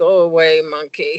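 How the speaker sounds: half-asleep, sleepy voice. Mother retelling answering her daughter with face in pillow, retelling in a sleepy voice. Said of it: "in a sleepy voice".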